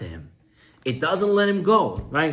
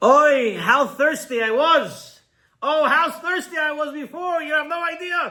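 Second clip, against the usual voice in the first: shrill, very high-pitched screaming; 12 semitones higher than usual. Retelling how the man shouts once the train moves: imitating someone screaming. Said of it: "He starts screaming".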